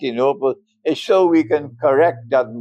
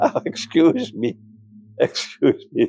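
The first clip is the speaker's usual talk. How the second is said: talking through laughter. Breaking off mid-sentence to apologise to students, laughing while talking. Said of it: "sorry, I'm laughing".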